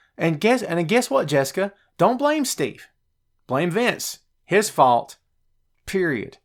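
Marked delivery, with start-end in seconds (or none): 2.0-6.3 a bit of audible resentment. Telling Jessica who is really to blame, with a bit of resentment. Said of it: "I say that with a bit of resentment in my voice".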